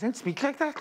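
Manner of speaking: thick, high, put-on Liverpool Scouse accent. Retelling a studio cameraman's reply to everyone in the studio, in a liverpool accent. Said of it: "but in a Liverpool accent".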